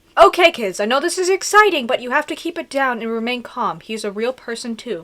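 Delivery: ordinary delivery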